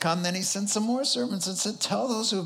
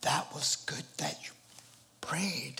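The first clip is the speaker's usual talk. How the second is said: put-on whisper, lower and quieter; 3 semitones lower, 8 dB quieter than usual. Retelling what a man said after the prayer: imitating someone whispering. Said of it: "Why are we whispering?".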